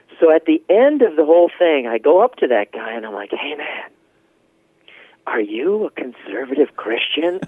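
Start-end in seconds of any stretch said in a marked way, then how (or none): 3.3-7.4 hushed, discreet, quiet delivery. Retelling going up to a man at the back of the room, in a hushed tone. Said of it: "And I said it in the hushed tone".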